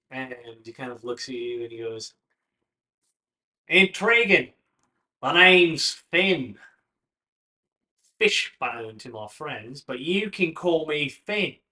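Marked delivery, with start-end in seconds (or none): 3.7-11.5 swashbuckling swagger, higher and louder. Voicing a stranger who introduces himself to the players: swashbuckler attitude. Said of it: "real swashbuckler attitude".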